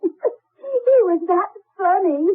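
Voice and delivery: talking through laughter. Explaining to another speaker about a little boy: laughing while talking. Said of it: "I'm laughing at it".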